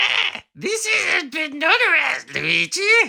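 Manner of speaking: very high squeak with swooping pitch. Speaker imagining a little toad lawyer advising Luigi, bad Toad impression. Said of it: "that's my Toad impression".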